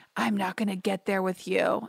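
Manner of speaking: acted quiet whisper. Recapping a scene, quoting his reply in Matt's typical whisper. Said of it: "in his typical Matt like whisper".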